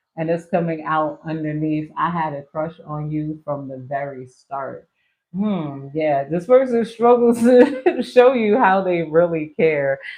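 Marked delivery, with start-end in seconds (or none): 6.3-10.0 laughing, pitched-up and raised voice through the words. Reading out a card message while laughing: laughing while talking. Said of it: "I don't know why I'm laughing".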